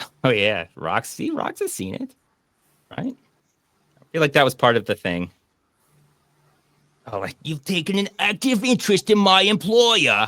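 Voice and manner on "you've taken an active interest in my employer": put-on high, over-the-top hammed-up Cockney accent. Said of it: "goes over the top with that Cockney accent".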